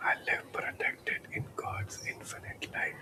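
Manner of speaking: very soft, barely voiced, hushed whisper. Leading an affirmation that another voice repeats, now in a whisper. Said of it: "In a whisper now".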